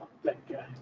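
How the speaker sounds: very soft, quiet, breathy whisper. Speaking in character about a man who warned the group to leave: whispering. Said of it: "I whisper".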